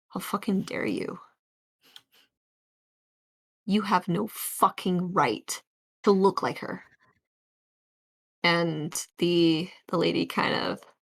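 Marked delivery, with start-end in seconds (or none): 0.2-6.9 voice catching, choking up. Narrating a scene, voicing Heath as he speaks to the lady; Heath's choked-up voice. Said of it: "this bit of this choke up, uh, kind of voice".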